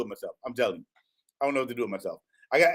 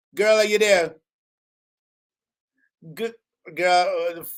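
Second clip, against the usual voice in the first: clumsy, bad, put-on Jamaican accent; 4 semitones higher, 3 dB louder than usual. Greeting a special guest caller on the phone, in a fake, very bad Jamaican accent. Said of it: "please forgive my fake, very bad Jamaican accent".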